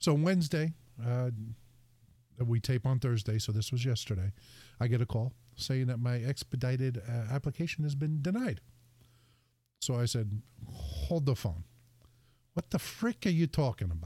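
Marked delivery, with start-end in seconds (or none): 10.7-14.1 put-on indignant, heated, annoyed New Jersey accent. Retelling own reaction to a denied application: retelling own Jersey outburst. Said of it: "my Jersey starts coming out".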